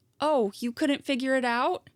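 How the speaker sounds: mock-pitying voice. Speaker retelling what a woman said to her, in a mock-pitying voice. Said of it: "said in this pity voice".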